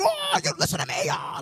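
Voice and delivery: sudden yelling, very high.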